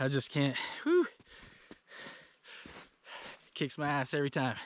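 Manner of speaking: winded, breathless, out of breath. Talking outdoors after exertion, out of breath. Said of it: "I'm out of breath".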